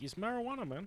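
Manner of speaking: very high, bad fake Mexican accent. Quoting how people in Mexico say it, terrible Mexican accent. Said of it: "that's my a terrible Mexican accent".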